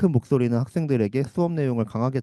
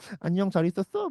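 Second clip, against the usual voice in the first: put-on high-pitched, lisping, short-tongued baby-talk voice; 8 semitones higher than usual. Greeting animals without meaning to: lisping baby-talk voice. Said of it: "저도 모르게 혀 짧은 소리도".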